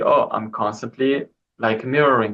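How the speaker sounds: ordinary talk, nothing marked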